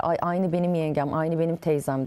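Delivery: ordinary delivery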